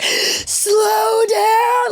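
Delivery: frantic, panicky, very high-pitched cry. Recalling the car starting the turns, retelling own panic. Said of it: "Like I literally start to panic".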